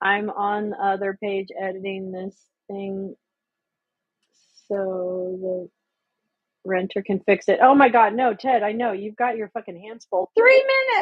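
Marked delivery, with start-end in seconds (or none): 10.4-11.0 very high, loud, thrilled burst of yelling. Calling out while chatting and typing: excited yell. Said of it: "I didn't mean to yell that".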